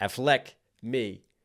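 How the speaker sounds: name said with stress on its second syllable. Quoting someone fitting a name into a rhyme, stress on second syllable of Affleck. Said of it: "he highlights the second syllable in Affleck instead of most of us do the A".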